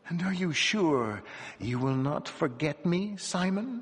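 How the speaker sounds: whispering. Reading a woman's line to simon at a feast, whispered. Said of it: "she whispered".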